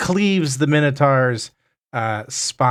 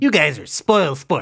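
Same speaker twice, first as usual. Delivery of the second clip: high, loud, sulky grumbling gnome voice. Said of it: "He's like".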